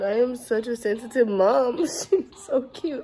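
teary, choked-up crying voice, choking on words. Mom watching her daughter open presents, crying. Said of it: "I'm literally crying".

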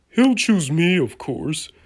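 loud, cocky, boastful bragging. Among engines hoping to pull an important train, one is boastful. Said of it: "boasted James the Red Engine".

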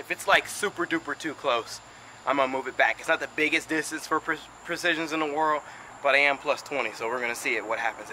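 winded, out of breath. Training with 20 added pounds, explain your plan while out of breath. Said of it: "I'm so out of breath right now".

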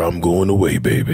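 very deep voice. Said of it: "the deepest voice ever".

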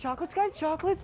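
pushy, desperate salesman voice. Offering chocolates to the guys: mock-desperate ballpark salesman pitch. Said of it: "My tone goes from like desperate ballpark salesman".

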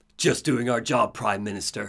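put-on suave, cool anime-boy hero voice, straining. Describing a game scene, imitating the character taking off his sunglasses. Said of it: "I will not be doing that voice the entire time because I will lose my voice".

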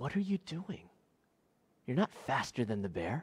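very hushed, disbelieving, incredulous half-whisper. Telling a joke, voicing a hiker who sees a bear: incredulous half-whisper. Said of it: "incredulously whispers down to him".

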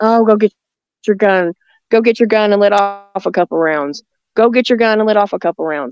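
normal talking voice

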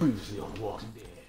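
television narrator voice. Imitating the show's opening recap line, as a Walking Dead recap narrator impression. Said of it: "did I sound like the dude who said that?".

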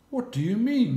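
purring softly. Confronted by the ostrich demanding her chicks back, the lion purrs softly. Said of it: "she purred softly".

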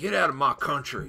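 heavy mock Southern accent.

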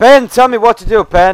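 loud, high-pitched yelling.

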